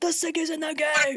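put-on DJ announcer voice. Imitating another speaker's hype voice: imitating a friend's dj voice. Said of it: "that's the D J voice?".

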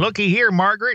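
high-pitched mocking voice.

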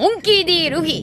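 put-on anime-style character voice. Claiming they could be a voice actor, the speaker shows off an anime character impression. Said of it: "Here's my impression of anime characters".

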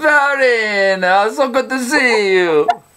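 big, high, slow Italian grandma voice, words stretched. Acting out God greeting a guest at heaven's gates: big Italian grandma voice. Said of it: "like a big Italian grandma".

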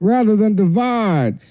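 put-on the word "divides" said with slight Southern accent. Doing an impression after the others discuss Biden impressions: Joe Biden impression. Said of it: "that's a little Southern".

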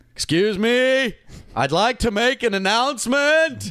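shrill, very high, loud, full-lunged shouting. Retelling a man's announcement to a restaurant, imitating someone shouting. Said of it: "at the top of his lungs says".

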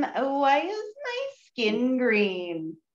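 drawn-out character voice, swooping up and down. Doing a quick impression: Marie Curie impression. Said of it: "This is my impression of famous scientist Marie Curie".

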